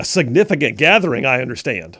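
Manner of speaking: mocking, openly scornful sarcastic tone. Talking about a protest down the street in alabama, mocking tone. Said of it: "Do you hear the mocking in my voice".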